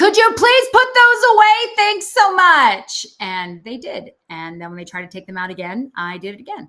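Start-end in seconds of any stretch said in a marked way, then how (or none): 0.0-3.0 put-on very loud, blaring, shrill, strong American accent. Speaker leans forward to people with phones out in a movie theater: loudest, very American accent. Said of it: "in my loudest, very American accent was like".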